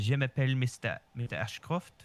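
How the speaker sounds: put-on proper, carefully French-sounding accent. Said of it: "in a French tone".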